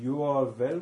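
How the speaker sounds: slow, deliberate, put-on German accent. Replying in character during the group's scene, in a slow german accent. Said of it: "in a very good slow German accent".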